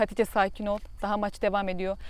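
plain

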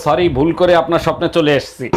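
ordinary delivery

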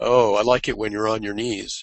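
ordinary talk

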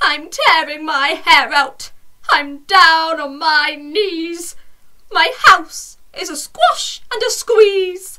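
put-on loud little old lady voice crying out. Reading a story aloud, the narrator voices the little old lady: little old lady voice. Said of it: "A little old lady lived all by herself".

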